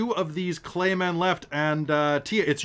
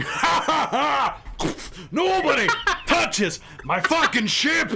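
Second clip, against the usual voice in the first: very high, shrill, drawn-out scream; 10 semitones higher, 3 dB louder than usual. Narrating Cadamus charging forward to hack two foes down, Cadamus screaming. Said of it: "while screaming and just going".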